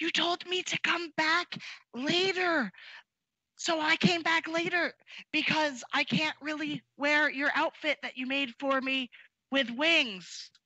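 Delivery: soft, non-intimidating whisper. A player's character speaks at a door where no one answers; gentle whisper. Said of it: "I'm gonna whisper it though".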